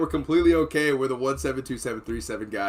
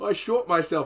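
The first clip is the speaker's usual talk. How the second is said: put-on British accent, higher pitched; 5 semitones higher than usual. Retelling how Kenny said he had shot himself: British accent imitating Kenny. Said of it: "I don't know why he's British now".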